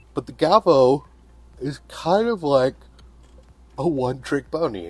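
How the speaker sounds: speaking through yawns. Comparing laser engravers in a video at twelve twenty at night, yawning. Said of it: "I keep yawning".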